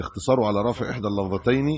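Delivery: ordinary delivery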